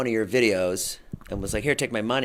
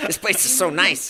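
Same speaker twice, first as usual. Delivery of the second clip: put-on heavy, hardcore Chicago accent, laid on hard, pitched up; 8 semitones higher, 3 dB louder than usual. Telling another person what Ilya said today, as Ilya in a hardcore Chicago accent. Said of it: "you give Ilya the most hardcore Chicago accent".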